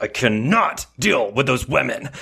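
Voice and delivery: snarling through teeth. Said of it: "snarls through her teeth".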